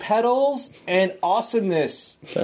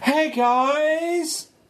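shrill, very high call, "guys" drawn out; 9 semitones higher than usual. Calling back to the others from a tunnel: shouting behind me. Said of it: "I'm shouting behind me".

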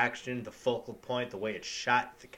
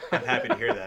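louder put-on deadpan delivery; 4 dB louder than usual. Retelling a movie scene, Alec Baldwin replying to Matt Damon, Alec Baldwin deadpan impression. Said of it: "Alec Baldwin, deadpan, goes".

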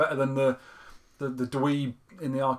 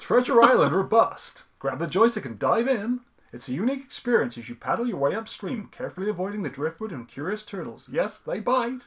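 put-on American accent, pitched up; 6 semitones higher, 4 dB louder than usual. Reading a passage aloud, in a put-on american accent. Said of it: "it's best said in an American accent".

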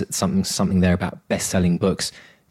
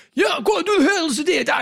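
bad put-on Scottish accent, much higher. Quoting what he said to his dad, in a terrible Scottish accent. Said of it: "That terrible accent".

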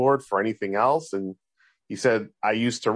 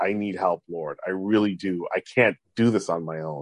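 put-on tearful, pleading tone; 3 semitones lower than usual. Retelling a prayer from a hard time: retelling a tearful prayer. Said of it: "I was really crying and praying".

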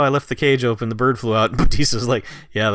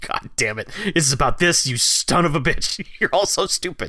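acted, super angry blow-up, pitched up; 5 semitones higher than usual. Retelling a scene from a film where Batista is furious: imitating Batista super pissed. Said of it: "Batista is just super pissed".

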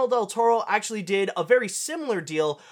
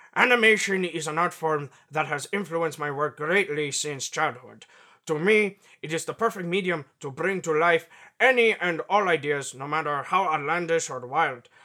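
put-on Mexican-accented voice, lower pitch; 4 semitones lower than usual. Reading a quote from a filmmaker aloud: Guillermo del Toro impression. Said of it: "my best, uh, Guillermo del Toro impression".

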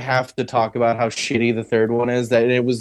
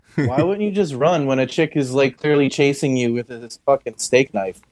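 ordinary delivery

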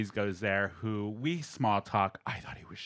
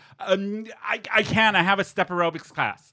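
high, panicked speech. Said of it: "and I panicked".

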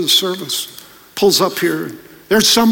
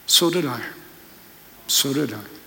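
low mutter under the breath, murmured to himself; 6 semitones lower, 8 dB quieter than usual. Retelling a father's reply to his child's remark: said under his breath. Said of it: "And under his breath".

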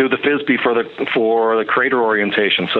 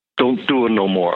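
slight Brooklyn accent. A speaker summing up everything he found, using a little Brooklyn accent. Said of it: "to use a little bit of Brooklyn accent".

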